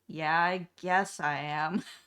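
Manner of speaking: put-on glum, resigned, slow and depressed delivery. Retelling a cartoon scene where Kitty answers Mimi: imitating Hello Kitty sounding depressed. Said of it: "she's so depressed".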